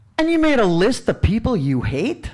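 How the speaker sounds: put-on Chicago accent with a disbelieving, incredulous tone. Speaker retelling what a man asked on hearing about the conference, Chicago accent impression. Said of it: "I got to imitate his voice".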